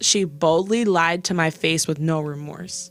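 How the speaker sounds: normal talking voice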